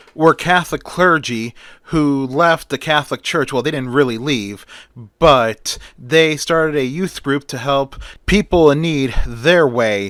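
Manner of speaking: usual speaking voice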